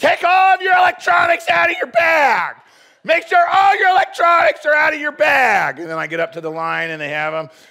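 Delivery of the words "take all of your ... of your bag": very loud, shrill, high-pitched yelling. Telling a Boston airport story, the speaker acts out a TSA lady yelling at travelers, imitating someone yelling. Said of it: "this lady was yelling at us".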